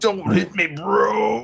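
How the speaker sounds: slow drawl with a creak. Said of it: "I think I did a good juicer voice".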